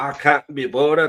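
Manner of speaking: put-on loud Scottish accent. Talking to the co-host, the speaker slips into a Scotty Scottish accent. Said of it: "Was that your Irish accent?".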